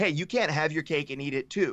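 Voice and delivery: plain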